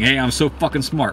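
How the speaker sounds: normal talking voice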